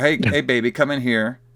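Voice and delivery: put-on obnoxious flirty guy voice. Retelling a movie scene, imitating an obnoxious flirting dude. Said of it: "an obnoxious dude."".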